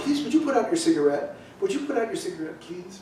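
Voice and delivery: put-on very quiet, quick, courteous English accent. Recalling the speaker's mother asking smokers on the subway, imitating polite english accent. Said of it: "Very politely, in an English accent".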